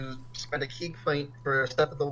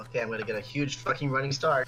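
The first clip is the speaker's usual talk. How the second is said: ordinary delivery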